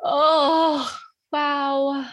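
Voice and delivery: overcome with emotion. Telling listeners about someone dear to them, getting emotional. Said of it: "I'm getting emotional even as I put my attention on him".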